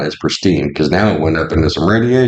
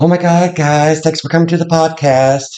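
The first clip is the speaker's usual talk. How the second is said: put-on silly, very high-pitched voice; 11 semitones higher than usual. Joking on a podcast about who must talk differently, demonstrating a high-pitched voice. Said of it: "talk in a high pitched voice".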